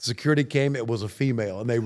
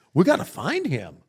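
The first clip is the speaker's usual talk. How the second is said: alarmed, panicky, urgent tone; 4 semitones higher than usual. Retelling how friends reacted when a buddy ran off naked, imitating friends panicking. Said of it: "they're panicking like".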